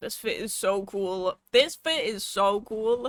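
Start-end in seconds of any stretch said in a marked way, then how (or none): 1.5-3.1 loud voice cracking mid-phrase. Talking right after taking a sip, voice cracking. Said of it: "Voice crack".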